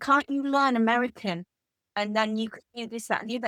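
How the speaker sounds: ordinary talk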